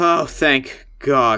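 deep, octave-dropped, sighed-out relief. Voicing a character hearing the name Goria: voice dropping an octave. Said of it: "the octave of her voice drops, like, one octave".

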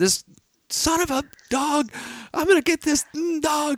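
very high, shrill, enraged yelling. Retelling sprinting after a dog on Christmas Day: re-enacting angry screaming. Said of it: "I'm screaming. I'm really mad".

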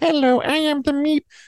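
very high, slow, shy, cute squeaky voice. Imitating the furry creature from an episode: shy, cute Meep voice. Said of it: "kind of really adorable and shy".

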